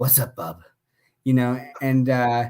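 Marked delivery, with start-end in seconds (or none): 0.0-0.6 very low, dropped voice. Retelling a sketch where Professor X fires Wolverine: imitating Wolverine. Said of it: "and he's like".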